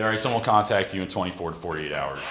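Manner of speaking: ordinary delivery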